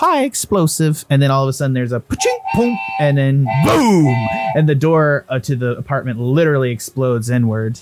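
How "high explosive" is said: very high, mechanical, machine-like voice. Voicing a device that repeats a command back: mechanical voice. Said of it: "a mechanical voice".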